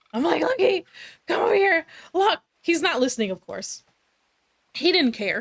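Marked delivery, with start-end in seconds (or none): 0.4-2.4 very high, crazed, panicky, frantic calling out. Retelling calling the barking dog Lucky back, reenacting frantic calling. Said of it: "calling him frantically like a crazy woman".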